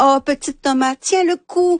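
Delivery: announcer voice, pitched way up, cheering.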